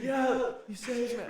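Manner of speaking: put-on shout. Retelling a talk between cars on the highway: imitating yelling across a window. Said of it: "yelling across the window".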